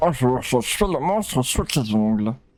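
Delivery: mock slow, garbled mumble as if mouth is full. Imitating how a game character talks: imitating talking with things in mouth. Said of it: "qu'il parle un petit peu comme ça, genre avec des trucs dans la bouche".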